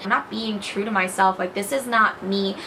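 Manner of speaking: ordinary talk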